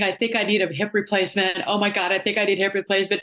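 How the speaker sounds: acted panicky voice. Retelling telling a physical therapist at dinner about her hurt hip, acting out own past panic. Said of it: "I'm catastrophizing right in front of her".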